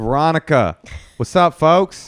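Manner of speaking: Oakland-style speech. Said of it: "I'm gonna speak a little different".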